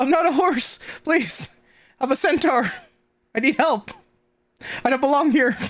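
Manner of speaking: high, desperate, pleading, begging voice. Voicing a centaur asking the players for help, pleading for help. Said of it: "asking for help".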